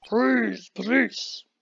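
angry, cross, gruff, rough-edged voice. Reading a game line calling for the police, sounding angry. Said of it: "Why the hell did I sound angry?".

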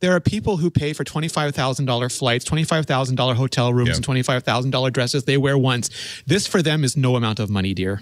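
ordinary talk

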